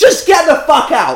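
very high-pitched, shrill yell. Telling an old man who can't hear to just get out; shouting. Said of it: "no need to shout".

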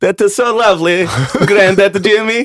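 put-on Lithuanian-accented speech. Imagining future grandkids answering a story: put-on Lithuanian accent. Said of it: "your kids with their Lithuanian accents".

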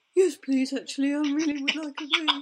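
goofy, dopey, silly put-on voice. Voicing a reply to mum's offer to go for a walk: silly dumb voice. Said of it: "I speak for him in this very dumb voice".

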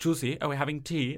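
put-on sweet, cute Dutch accent on English. Retelling what Dutch asked her at home, imitating Dutch's Dutch accent. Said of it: "which is very cute in a Dutch accent".

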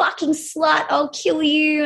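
put-on, livid, half-shouted mild angry yell. Retelling how a man dragged out by security screamed: imitating someone screaming. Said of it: "was screaming at me".

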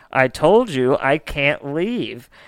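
mock words breaking up in hysterical laughter. Retelling what a woman told the homeowner, imitating hysterical laughing speech. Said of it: "laughing hysterically and says".

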